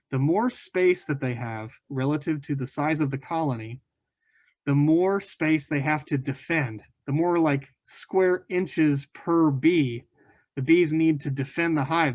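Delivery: slow, deliberate, emphatic teaching delivery.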